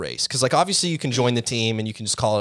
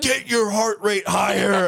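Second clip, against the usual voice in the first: shrill high-pitched screaming; 10 semitones higher than usual. Retelling a trainer session at the bike shop: imitating Mike screaming. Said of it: "screaming at me".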